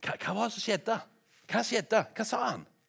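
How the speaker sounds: eager voice, high-pitched and loud.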